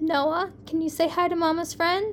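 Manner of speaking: plain reading voice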